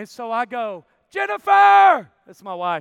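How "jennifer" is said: loud, high-pitched yell. Telling a story about calling out to his wife, retelling a yell from the back. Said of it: "I'm yelling from the back".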